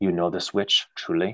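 hushed, quiet voice close to the ear. Voicing a character leaning in to a player's ear: quiet voice. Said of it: "will say quietly in your, in your ear".

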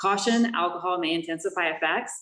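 ordinary talk

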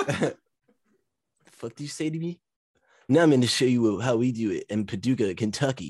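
very slow voice, every word dragged out. Imitating Ricochet reacting to being called bald: Ricochet voice. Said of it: "Why did you give Ricochet that voice?".

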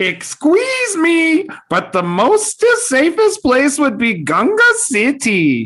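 very high, goofy, swooping, sing-song cartoon alien voice. Taking a turn in a round of movie impressions, doing a Jar Jar voice. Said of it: "the perfect Jar Jar voice".

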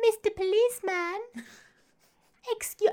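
very high, floozy voice. Retelling a TV scene, voicing the character as a floozy. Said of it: "I've turned her into a quote-unquote, nine, like, a floozy".

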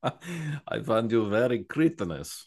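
vampire-like delivery. Joking about the word cretin, the speaker delivers a line in a vampire-like voice. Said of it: "Now that sounded like a vampire".

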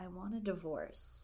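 spoken quietly. Retelling a scene, the speaker quotes a woman's barely audible line to a ranting man; quietly. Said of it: "she quietly says".

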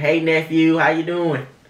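put-on high, loud, drawn-out Southern Georgia accent. Retelling how an aunt from Alabama and Georgia greets: imitating an Alabama and Georgia accent. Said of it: "the way they say nephew".

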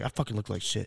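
usual speaking voice

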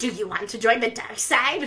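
sinister, villainous, evil voice. Mocking how Slytherin is pitched to eleven-year-olds, in an evil voice. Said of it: "an evil voice being like".

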